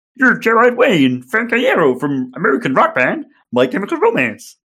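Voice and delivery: full-on, committed cartoon puppet frog voice. Reading a story aloud to a listener, voicing Kermit's line: Kermit the Frog voice. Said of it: "You're really committing you. to the voice".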